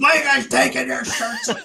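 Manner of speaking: play-acted, very high, rough, swooping, furious outburst. Retelling a team meeting where the coach ramps up: imitating Joel Quenneville getting super mad. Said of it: "the dad that's, like, super mad".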